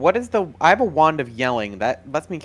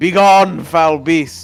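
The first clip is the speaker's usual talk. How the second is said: very loud, intimidating yell; 3 semitones higher, 9 dB louder than usual. A character uses a hollering wand to scare a beast away, yelling in Draconic. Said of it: "like yell in draconic like".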